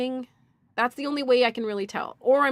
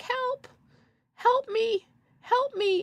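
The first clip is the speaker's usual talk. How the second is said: very high, long, stretched-out pleading cries; 13 semitones higher than usual. Retelling a neighbouring patient stuck on a commode: imitating Verna yelling for help. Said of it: "Don't just start yelling".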